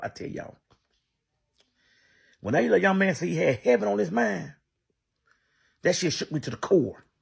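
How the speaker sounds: choked-up, slightly high voice. Telling the audience about a young man, the speaker gets a little choked up. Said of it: "excuse me for getting a little choked up".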